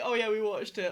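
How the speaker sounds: mocking imitation of another voice. Mocking the other speaker for claiming to have watched the videos: mocking imitation of the other speaker. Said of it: "And there you are saying".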